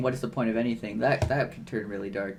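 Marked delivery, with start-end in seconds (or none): none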